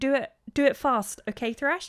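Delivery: put-on frightened, girlish, high childlike voice. Acting out what she says while wiping her nose: imitating a scared child voice. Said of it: "she sounds scared".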